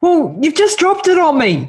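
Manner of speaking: squeaked, put-upon, ambushed-sounding reply. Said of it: "And he's like".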